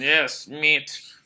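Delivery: put-on Eastern European accent. Speaker retells a man's funny joke about meat, in an eastern european accent. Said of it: "the standard Eastern European".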